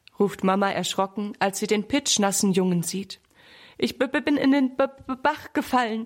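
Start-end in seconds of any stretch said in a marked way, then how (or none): 3.8-6.1 teeth chattering, higher and slower. Reading a story, the soaked boy answering his frightened mother, teeth chattering. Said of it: "klappert Sammy mit den Zähnen".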